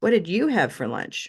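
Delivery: strong stress on you, rest plain. Asking about lunch with the stress moved: stress on you. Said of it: "move the stress to you".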